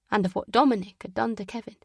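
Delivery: ordinary delivery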